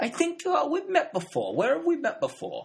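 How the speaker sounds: very high character voice, swooping up and down. Imitating a film character recognising someone: Lancaster Dodd impression. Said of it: "Is that your Philip Seymour Hoffman?".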